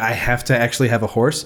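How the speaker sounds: plain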